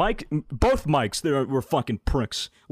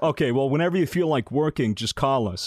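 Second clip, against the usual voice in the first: usual speaking voice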